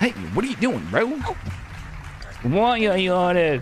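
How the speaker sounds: cartoonish bro voice. Mimicking a man who asked about the dog, in a cartoonish bro voice. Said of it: "he sounds like a freaking cartoon character".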